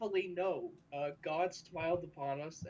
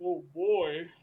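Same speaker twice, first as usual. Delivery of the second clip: mock shaken-up exclamation, louder; 6 dB louder than usual. Mimicking how another speaker just said it: imitating a roller-coaster exclamation. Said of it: "Like you went on a roller coaster".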